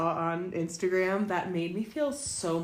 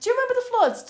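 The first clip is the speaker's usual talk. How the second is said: put-on very high, very loud, shrill, botched British accent; 9 dB louder than usual. Retelling what a man said at the start of his story, in a bad British accent. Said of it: "What even was that?".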